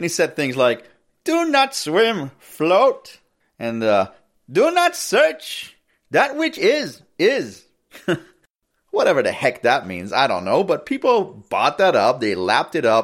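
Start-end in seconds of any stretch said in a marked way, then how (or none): 1.2-7.6 drawn-out put-on Indian accent, very high, very slow. Quoting things a guru said to people who loved him, in a put-on Indian accent. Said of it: "I want to do my Indian accent here".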